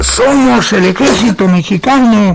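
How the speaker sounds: shouting like rescuers.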